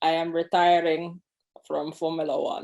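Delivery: put-on Austrian German accent. Acting out a Formula One retirement announcement, put-on Austrian German accent. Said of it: "That's my Austrian German accent".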